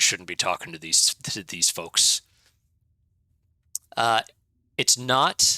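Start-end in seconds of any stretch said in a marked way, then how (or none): 0.0-2.2 very low, grumbled-out, complaining half-orc voice. Narrating the game, voicing the half-orc behind the leader; grumbling half-orc voice. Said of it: "kind of grumbles out a".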